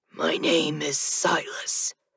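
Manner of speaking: soft, raw, raspy near-whisper. Reading a story, Death tells the narrator his name in a raw, raspy voice. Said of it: "he counters in his raw, raspy voice".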